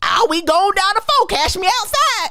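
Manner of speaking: put-on, high-pitched Southern girl's accent. Speaker mocking how a southern girl sounded to them, imitating her southern accent. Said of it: "that's how she sounded to me".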